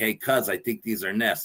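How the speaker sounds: usual speaking voice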